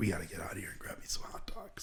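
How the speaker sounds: whispered. Telling a story about wanting hot dogs, quoting what he whispered to everybody: retelling a whisper. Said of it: "I'm just like whispering to everybody like".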